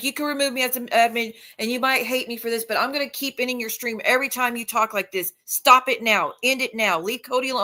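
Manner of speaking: desperate, begging, pleading voice. Retelling chat messages begging someone to stop: imitating someone pleading. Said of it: "She was begging with John and pleading with John".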